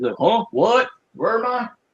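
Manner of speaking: put-on confused, bewildered mumbling. Mocking a man, the speaker acts out his words: mock-confused mumble. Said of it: "You got to mumble, look at the floor, look confused".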